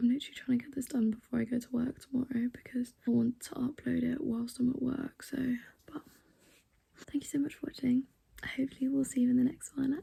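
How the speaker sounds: whispered voice. Signing off a haul video late at night, whispering. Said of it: "I'm also whispering because it's really late".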